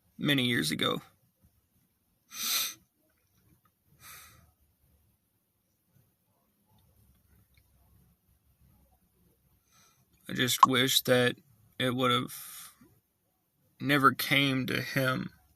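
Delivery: tearful, fighting to hold back crying. Speaking about a grandfather, trying not to cry: holding back tears. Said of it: "I'm trying to hold my tears in".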